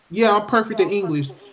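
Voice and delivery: ordinary talk, nothing marked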